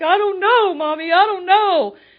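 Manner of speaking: very high, very loud sobbing. Retelling what was said to mom at the police station: retelling own crying words. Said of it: "And I'm crying".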